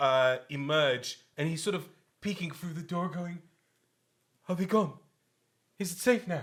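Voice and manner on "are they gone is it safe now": frightened, wary, fearful voice. Voicing a scared man peeking through the door: scared. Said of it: "a scared face".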